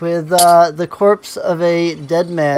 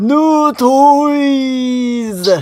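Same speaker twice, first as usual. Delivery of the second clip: ogre voice yelling, higher; 8 semitones higher than usual. Voicing an ogre who drops a corpse and points: ogre shouting. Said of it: "shouts out".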